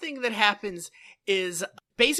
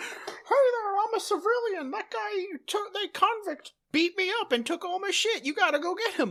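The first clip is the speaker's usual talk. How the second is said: very high, dopey, dumb fake puppet voice; 13 semitones higher than usual. Retelling a scene where a man disguises his voice, dumbest fakest Muppet voice. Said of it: "fakest Muppet voice".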